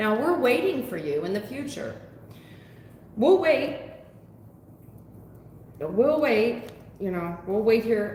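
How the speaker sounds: heavy, taunting, mocking sarcastic tone. Addressing a listener directly: sarcastic. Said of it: "The reason why I'm being so sarcastic".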